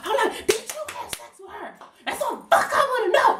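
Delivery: play-acted, very high-pitched, furious, angry ranting. Retelling how she confronted her ex-boyfriend on the phone: imitating herself going off angrily. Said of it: "I'm just going off".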